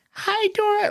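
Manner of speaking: put-on super high-pitched kid voice. Describing a cartoon character greeting Dora, Boots voice, super high-pitched. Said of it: "like super high pitched, like sounds like a fucking kid".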